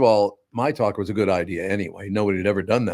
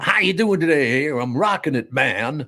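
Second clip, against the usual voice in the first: cheesy, corny put-on DJ voice, much higher; 7 semitones higher than usual. Mocking how radio hosts talk nowadays, in a cheesy radio DJ voice. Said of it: "Why are you talking like that?".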